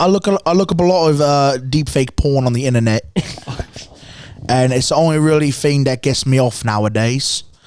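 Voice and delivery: put-on attempt at a British accent. Asked by another speaker to hear their British accent, answering in a put-on British accent. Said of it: "I want to hear y'all's British accent".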